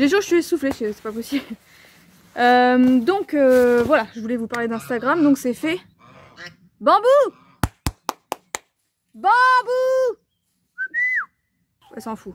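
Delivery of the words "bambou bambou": very high-pitched shout. Interrupting a video to shout at someone rubbing against a tree border. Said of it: "je suis en train de crier sur Bambou".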